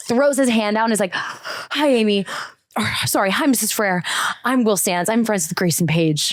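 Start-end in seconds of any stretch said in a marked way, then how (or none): 1.1-6.3 out-of-breath, panting, huffing voice. Retelling a kid sprinting across the street to greet her mom: imitating Will Sands huffing and puffing. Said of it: "huffing and puffing".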